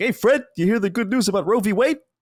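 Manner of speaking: goofy cartoon sidekick voice. Recounting a Flintstones bit done with friends, the speaker does a stupid Barney voice. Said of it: "fun to bullshit with stupid voices".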